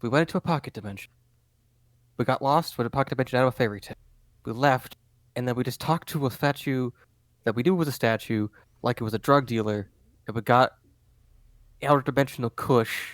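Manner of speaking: stage whisper, half-voiced. Voicing a character on a bench, recapping events: stage whispering. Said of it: "partially, like, like, stage whispering".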